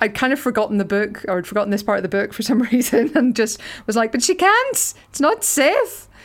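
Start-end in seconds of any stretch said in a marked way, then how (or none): 4.1-6.0 acted fear, Northern Irish accent, much higher, slower. Recalling their reaction to a part of the book, reenacting being scared, Northern Irish accent. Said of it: "your like Northern Irish accent really came out there when you're scared".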